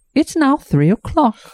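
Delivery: announced very high, like royalty. Show how she would announce the hour on Big Ben, in a Queen of England voice. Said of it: "I would have the Queen of England".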